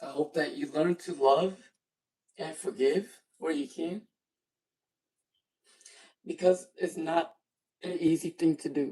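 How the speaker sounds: crying while talking. Closing a live stream with hopes for the viewers, crying while talking. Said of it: "why the fuck am I crying right now?".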